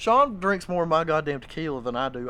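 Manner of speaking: ordinary talk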